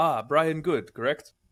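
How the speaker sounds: fake Japanese accent drifting into Indian accent. Voicing a man who recognizes a player: put-on accent. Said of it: "Don't do the accent".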